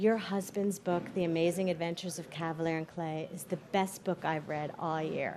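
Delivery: intimate, very soft half-whisper. Retelling a compliment half-whispered in one's ear: imitating Oprah half-whispering. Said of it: "in my ear she whispers".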